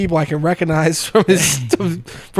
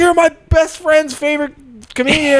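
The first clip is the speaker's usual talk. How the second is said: acted very high, gushing, starstruck scream; 9 semitones higher than usual. Retelling how a fan ran up to a comedian: imitating a fan screaming.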